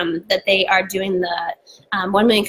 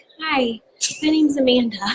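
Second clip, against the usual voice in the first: put-on eager, high little-kid voice, like a small child; 6 semitones higher than usual. Retelling going up to someone at Starbucks: retelling own greeting like a little kid. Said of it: "I went up to her like I was, like, a little kid".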